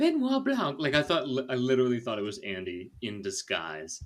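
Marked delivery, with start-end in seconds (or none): 0.0-0.8 put-on high, loud voice with Southern accent. Retelling Helen at the door in a mask: Helen's southern accent. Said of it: "And she's like".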